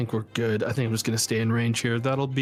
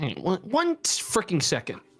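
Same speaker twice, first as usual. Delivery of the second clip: curt, forceful and aggressive; 7 semitones higher than usual. Asking the game master to wait while checking something: aggressive. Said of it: "That was so aggressive".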